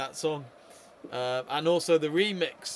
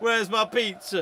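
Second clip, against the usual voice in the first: mock Italian accent, much higher pitch; 6 semitones higher, 4 dB louder than usual. Teasing the other commentator, a speaker mimics his italian pizza accent. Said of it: "doing his Italian pizza accent there".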